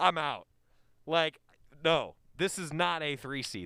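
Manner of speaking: ordinary talk, nothing marked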